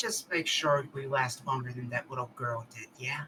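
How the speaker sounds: soft, barely audible half-whispered aside. Describing leaning in to someone before he walks off, half-whispering. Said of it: "lean into him and whisper".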